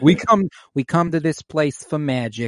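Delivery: put-on high-pitched, thickly laid-on Boston accent. Quoting the AMC theater opening ad: Nicole Kidman impression, thick Boston accent. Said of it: "the Boston accent that's, like, really thick".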